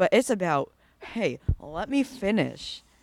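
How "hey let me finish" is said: mock, very slow, hostile and aggressive. Retelling own reply when asked to do more mid-task: mock aggressive tone. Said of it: "sounding really aggressive".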